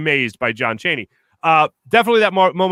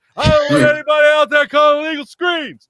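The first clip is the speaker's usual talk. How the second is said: mock screaming voice, pitched higher; 11 semitones higher, 4 dB louder than usual. Retelling hearing John Chaney down a hallway: imitating John Chaney screaming. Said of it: "screaming and yelling".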